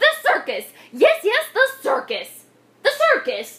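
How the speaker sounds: very high, thrilled, excited shout. Reading a character's exclamation as she hunts for piggies: shouted. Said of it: "She shouted with a jump".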